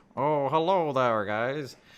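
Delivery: slow, drawn-out cartoon character voice. Voicing Zoidberg greeting the players from the corner: Zoidberg voice. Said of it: "He goes".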